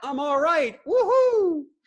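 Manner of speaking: goofy, silly, very high, shrill whoop. Showing how to get back to a positive place after a cut: goofy. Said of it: "I sound so goofy".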